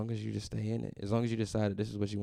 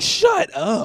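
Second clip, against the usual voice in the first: excited, shrill, very high and loud yelling; 17 dB louder than usual. Retelling seeing another comedian walk in: imitating own yell. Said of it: "I'm yelling".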